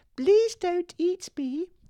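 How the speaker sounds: tiny mouse voice, very high and squeaky. Reading a fable aloud, the caught mouse speaks to the lion: squeaky mouse voice. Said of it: "the mouse squeaked".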